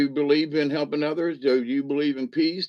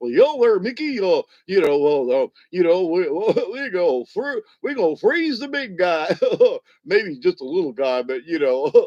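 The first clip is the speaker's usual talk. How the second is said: silly, hammy cartoon voice with big swooping pitch; 3 semitones higher, 4 dB louder than usual. Recounting talk of freezing Uncle Walty, in a shameless Goofy voice. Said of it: "in my shameless Goofy voice".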